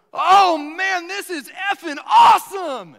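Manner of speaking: very loud, very high, booming, shrill, drawn-out yell. Retelling how a man yelled after hugging someone in the sanctuary, imitating the yell. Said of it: "And he just yelled".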